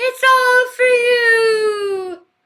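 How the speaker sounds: high-pitched, loud, slow delivery. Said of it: "I watched The Omen".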